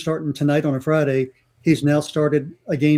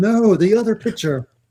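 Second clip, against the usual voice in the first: high, light, drawn-out scream; 6 semitones higher than usual. Retelling own reaction as the card was read aloud: retelling a scream. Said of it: "just screaming".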